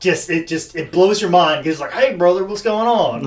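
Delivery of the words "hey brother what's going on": put-on Southern Tennessee accent. Quoting a wrestler with a Japanese gimmick, in a southern Tennessee redneck accent. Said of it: "the most southern Tennessee redneck accent ever".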